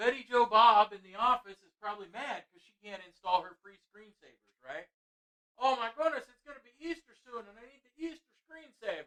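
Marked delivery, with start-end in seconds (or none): 5.5-9.1 fake Irish accent, pitched up high. Speaker imagines an office worker complaining, fake Irish accent. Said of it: "I don't know how [name] got kind of a fake Irish accent there".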